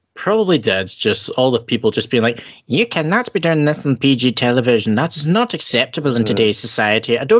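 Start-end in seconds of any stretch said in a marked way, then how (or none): 2.7-7.2 complaining tone in a put-on Irish accent. Imitating parents complaining about a tv segment being inappropriate: put-on irish accent. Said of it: "I'm making them sound like this when they're American".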